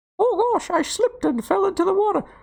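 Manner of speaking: play-acted very high cartoon mouse voice. Performing a viewer-redeemed sound, Mickey drowning impression. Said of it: "Mickey drowning".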